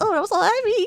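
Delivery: giggling, very high-pitched giggly voice. Retelling her reply to him, imitating someone giggling. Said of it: "giggly laughing".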